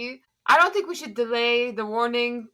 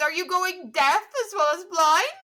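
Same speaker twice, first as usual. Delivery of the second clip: high-pitched words pushed through laughter; 7 semitones higher than usual. Narrator voicing Inara's reply to the group, laughing while talking. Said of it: "Inara laughs even harder. She goes".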